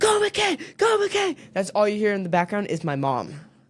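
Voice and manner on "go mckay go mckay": acted, very high, drawn-out cheering yell. Retelling how mom cheers from the stands: imitating mom screaming cheers. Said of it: "and then my mom's like".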